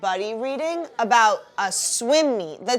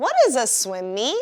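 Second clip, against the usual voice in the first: sharp, question-like pitch rise on meet. Teacher models a question for the class to repeat: rising question tone on meet. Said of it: "saying questions with our voice going up like a chipmunk. What? Listen to me say it".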